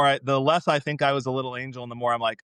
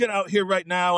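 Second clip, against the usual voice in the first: acted-out angry, fed-up, pissed-off voice; 5 semitones higher than usual. Remembering dad coming in to order the kids outside, imitating dad's angry order. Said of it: "he'd be like mad and pissed off".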